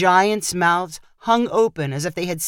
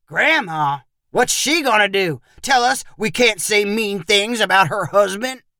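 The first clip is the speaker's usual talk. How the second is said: scornful, derisive, mocking voice; 2 semitones higher than usual. Narrator reading Perry's reply to Junie in a story, mocking voice. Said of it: "Perry said in a mocking voice".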